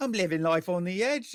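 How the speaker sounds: put-on loud, high, botched Cockney accent. Speaker quoting what the listener used to say, in a bad Cockney accent. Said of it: "I'll do the voice".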